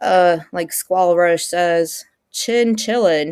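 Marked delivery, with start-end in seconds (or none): 2.3-3.3 put-on, wannabe American accent. Quoting someone's catchphrase to a co-streamer, in a trying-to-be American accent. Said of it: "like such a trying to be an American accent".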